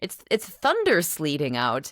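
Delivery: ordinary delivery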